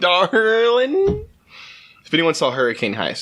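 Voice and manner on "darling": high, bad Southern accent with a drawl. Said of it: "it's that kind of Southern accent".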